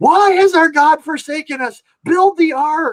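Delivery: put-on announcer yelling. Retelling what a radio DJ started shouting on air, retelling a DJ's shouting. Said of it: "started shouting".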